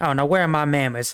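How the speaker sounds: put-on Wild West lady voice. Voicing Calamity Jane greeting the players: Calamity Jane voice. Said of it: "and she just goes, like".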